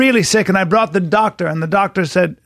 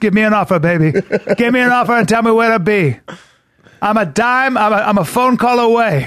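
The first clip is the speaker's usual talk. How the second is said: put-on elderly man's chatty voice, about eighty-nine; 3 semitones higher than usual. Retelling Jack's reply to a compliment on his voice: imitating Jack. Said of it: "That's how he is".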